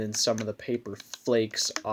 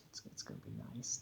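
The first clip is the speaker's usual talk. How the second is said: whispered, soft, hushed put-on voice; 18 dB quieter than usual. Speaker announces a whispered bit, then speaks in whispered Bob Ross voice. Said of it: "I'm gonna whisper in a Bob Ross voice".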